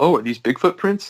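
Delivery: mock playful ribbing, teasing tone. Retelling how his wife teased him about the footprints: imitating teasing wife. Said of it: "she started teasing me right away".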